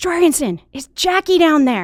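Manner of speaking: very high, piercing scream. Retelling someone screaming down from the top of the weight room stairs: imitating someone screaming. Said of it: "he screams".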